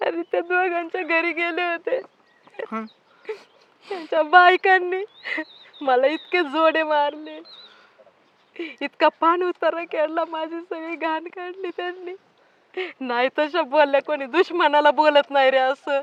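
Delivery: tearful. A sister answers her brother, who begged her to explain, crying. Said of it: "ए ताई रडू नको".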